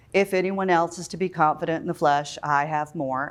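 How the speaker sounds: flat, mechanical, unengaged monotone reading. Showing how a text gets read without engagement: flat, unengaged reading. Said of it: "as if it went in at your eyes and out at your mouth".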